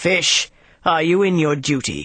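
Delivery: dreadful, terrible, fearsome giant voice. Reading a tale, a figure of gigantic stature addresses the fish in a terrible voice. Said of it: "said with a terrible voice".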